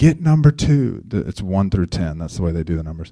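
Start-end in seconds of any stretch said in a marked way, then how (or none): 0.0-1.0 mock barked yell, loud and high-pitched. Retelling a basketball game, yelling at players to guard: retelling yelling at players. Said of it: "I'm yelling at them in the first half".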